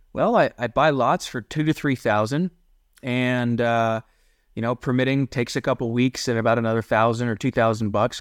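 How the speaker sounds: ordinary talk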